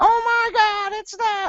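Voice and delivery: put-on girly hyped announcer voice, very high and very slow. Retelling how the match announcer sounded when hyped: imitating a hyped announcer talking like a girl. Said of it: "when he would get hyped, he would be like".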